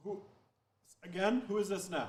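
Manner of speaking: put-on Scottish accent. Answering a group's 'beam me up' call, in Scotty's Scottish accent. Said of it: "So a Scottish accent comes on".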